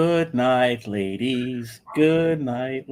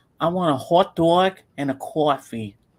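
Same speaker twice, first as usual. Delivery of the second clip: slow, put-on New York accent from the boroughs; 3 semitones higher than usual. Describing people ordering at a corner store, the speaker imitates a new york accent. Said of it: "because I've heard accents like that".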